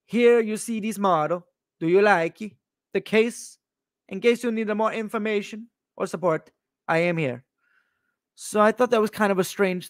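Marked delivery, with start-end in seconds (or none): 0.1-7.4 put-on Italian accent. Retelling a salesperson's WhatsApp message aloud: put-on Italian accent. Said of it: "I'll do it in the accent".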